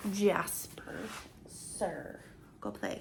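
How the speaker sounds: soft, hushed whisper.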